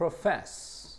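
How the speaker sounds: stress on last syllable of profess.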